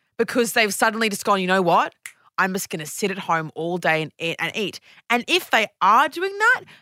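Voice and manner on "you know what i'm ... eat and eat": ordinary talk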